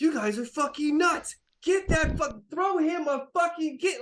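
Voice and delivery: very high, shrill, furious ranting yell. Voicing a beet red, furious captain yelling at the crew: furious yelling. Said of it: "he's yelling".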